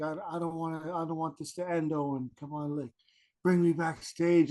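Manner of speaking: mock imploring, earnest, pleading, begging tone. Retelling begging to be brought backstage, retelling own begging. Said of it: "I was begging him".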